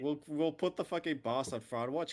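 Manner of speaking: mock angry, high-pitched, mad griping. Imitating how he will react to the fight: imitating someone mad. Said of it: "gonna be so mad".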